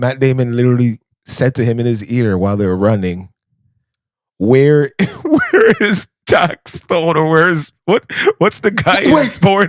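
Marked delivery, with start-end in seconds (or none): 4.4-9.7 put-on screaming, higher. Retelling an actor screaming in another actor's ear while running: imitating Matt Damon screaming. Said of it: "he was screaming it in his ear".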